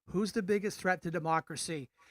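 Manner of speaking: ordinary talk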